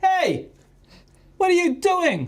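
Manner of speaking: high, loud shout sounding from far away. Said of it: "someone on the other side of the building going".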